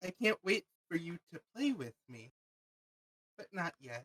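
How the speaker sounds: tiny giggling voice. Voicing a voice heard in the players' heads: tiny giggling voice. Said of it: "it sounds like a tiny giggle".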